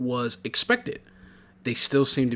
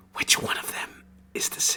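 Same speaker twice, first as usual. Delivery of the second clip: hushed, whispered, secretive tone. Voicing a character who leans in and asks secretly: whispering in character. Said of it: "she whispers to you".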